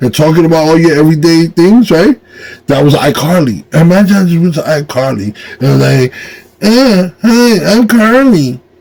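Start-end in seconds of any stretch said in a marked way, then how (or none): 6.6-8.5 high, drawn-out teasing voice. Imagining walking up to Carly: mocking Carly impression. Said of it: "sounds like I'm making fun of her".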